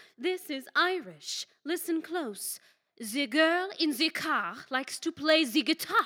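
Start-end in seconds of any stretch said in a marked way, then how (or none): 3.0-6.1 put-on accent that comes out French-sounding. Insisting the accent is Irish and repeating the practice sentence, in a French-sounding accent. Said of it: "that's French".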